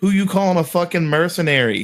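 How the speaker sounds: put-on shout. Voicing a character shouting back across a clearing: Ricky impression shouting. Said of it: "In his best Ricky impression".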